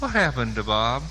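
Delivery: tender, gentle, kind voice. Retelling the voice heard while awaiting the great judge's verdict, gentle and kind. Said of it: "I heard a gentle, kind voice say".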